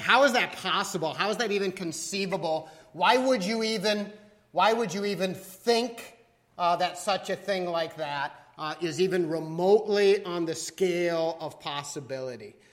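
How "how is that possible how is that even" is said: usual speaking voice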